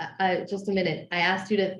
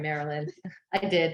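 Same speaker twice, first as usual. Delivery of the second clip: plain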